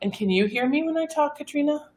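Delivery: soft, quiet voice. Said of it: "But she never talks like this".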